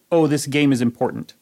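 normal talking voice

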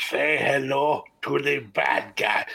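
poor, slow, stretched delivery. Retelling a bad Scott Hall impression someone did: bad Scott Hall impression. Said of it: "he put on the worst Scott Hall impression".

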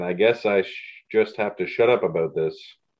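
normal talking voice

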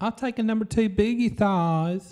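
put-on effeminate southern gentleman voice. Setting a challenge, the speaker demos a drive-through order: southern effeminate gentleman voice. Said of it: "As the southern effeminate gentleman".

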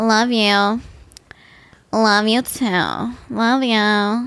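very slow, drawn-out you each time. Imitating how the Kardashians say I love you: Kourtney Kardashian impression. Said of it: "you sound exactly like Kourtney".

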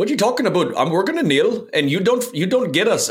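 poor put-on Canadian accent. Voicing the kneeling team's reply to critics, in a horrible Canadian accent. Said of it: "That was a horrible Canadian accent right there".

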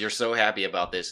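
ordinary talk, nothing marked

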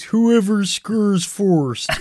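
high, loud referee announcer voice. Retelling how someone announced on the broadcast, ref voice like the Swedish Chef. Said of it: "he was doing it in like a ref voice".

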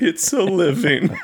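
choked-up voice. Narrating a vulture shedding a tear to camera, in a choked-up voice. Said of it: "A choked voice says".

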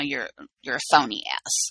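whispered mutter under the breath. Retelling what Sandoval said to Lala: imitating Sandoval muttering under his breath. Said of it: "under his breath, he's kinda like".

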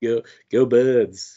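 slow, drawn-out New York accent.

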